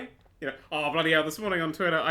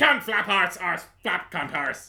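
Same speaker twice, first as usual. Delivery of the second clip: put-on Irish priest voice, louder; 4 dB louder than usual. Answering a question put to the special guest, Father Jack voice. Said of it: "whenever I say the word arse, I have to pronounce it like Father Jack".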